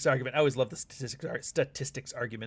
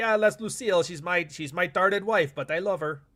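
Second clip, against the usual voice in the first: put-on French accent; 4 semitones higher than usual. Describing a husband talking about his wife, the speaker voices Ricky Ricardo in a French accent. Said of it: "I don't know why I gave him a French accent".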